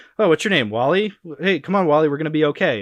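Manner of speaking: encouraging, nice good-guy hero voice. Retelling a movie scene of lifting a beam: imitating good-guy Bruce Wayne. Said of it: "They're making good guy Bruce Wayne".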